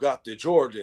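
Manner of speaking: wild, crazy, over-the-top put-on Russian accent. Retelling a Russian man asking whether the speaker got the Jordans, imitating a crazy Russian accent. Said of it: "he got the crazy accent".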